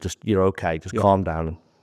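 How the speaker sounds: usual speaking voice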